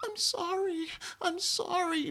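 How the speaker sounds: very high, drawn-out, tiny innocent voice. Mimicking how she sounds on a recording, in a mock little innocent voice. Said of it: "her little innocent voice, her going".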